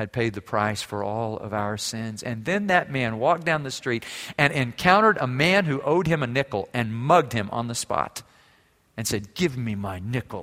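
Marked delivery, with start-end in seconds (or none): 9.3-10.4 put-on through gritted teeth, lower, quieter, slower. Retelling a parable, voicing a man demanding a debt, acting out speaking through teeth. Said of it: "as he spoke through his teeth".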